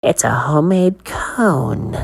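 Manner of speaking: words pushed out as a hiss. Narrator voicing a man presenting a scoop of ice cream: hissing. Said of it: "the man hissed".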